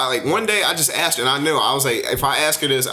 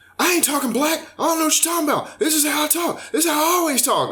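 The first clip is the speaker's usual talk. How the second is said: mock, heated, angry voice, pitched way up; 14 semitones higher than usual. Retelling her reply after asking why she talks that way: imitating her getting mad. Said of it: "she got mad".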